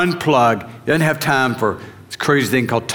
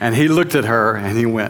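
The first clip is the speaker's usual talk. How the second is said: ordinary delivery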